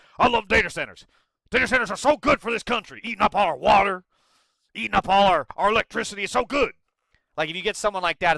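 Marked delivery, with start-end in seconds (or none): 0.2-6.8 loud, ranting put-on voice like a radio host. Imitating a supporter of data centers: Alex Jones as Beetlejuice voice. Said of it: "That's my impression".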